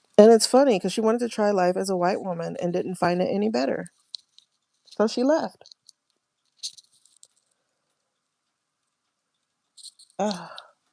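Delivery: teary, close to tears. Speaker getting acknowledgement tears while talking to viewers, tearful. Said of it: "I'm trying to dry my eyes".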